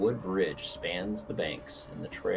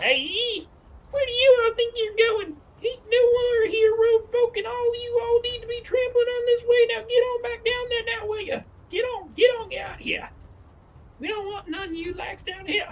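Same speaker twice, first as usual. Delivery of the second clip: put-on shrill, squeaky boy voice, very high, very loud hollering; 10 dB louder than usual. A narrator voices a figure calling out to travelers at a bridge in a squeaky voice. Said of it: "he calls out to you in a squeaky voice".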